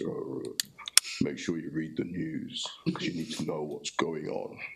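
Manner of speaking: put-on rough, no-nonsense old man voice. Quoting a grandfather's repeated advice, imitating his gruff voice. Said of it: "in his gruff voice".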